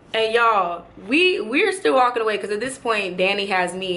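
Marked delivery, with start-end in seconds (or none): none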